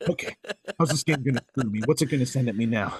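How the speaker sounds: mock wary, braced, fast on-edge inner voice. Retelling his thoughts after beating a game boss: imitating his own on-edge thoughts. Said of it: "I'm still on edge. I'm like".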